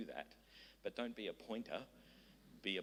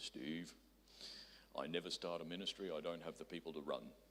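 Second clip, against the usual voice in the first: deep, low preacher's voice; 4 semitones lower than usual. Speaker recalls a pastor's advice to him, imitating Rod Jobe's deep voice. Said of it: "in his deep voice".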